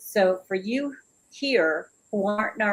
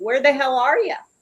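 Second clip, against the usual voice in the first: cheeky, sassy, loud delivery; 4 semitones higher, 5 dB louder than usual. Asking the group's members why they are not commenting: sassy. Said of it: "I'm being sassy here".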